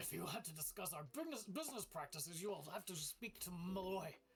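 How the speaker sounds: grumbled speech. Voicing her reply to the player's question about business, grumbling. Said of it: "She grumbles and she says".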